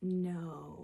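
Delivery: gentle, soft, drawn-out, unaggressive delivery. Describing how she says no, demonstrating a soft 'no'. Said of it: "it's just a soft, like".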